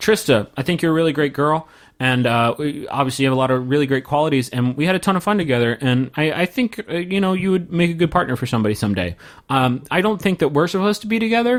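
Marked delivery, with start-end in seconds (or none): none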